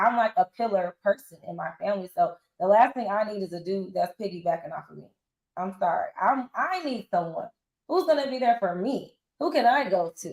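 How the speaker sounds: plain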